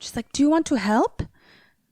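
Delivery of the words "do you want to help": put-on high-pitched Swedish accent. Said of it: "That was my Swedish accent".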